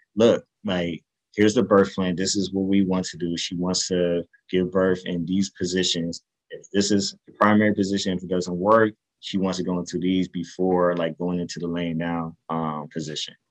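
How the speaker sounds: usual speaking voice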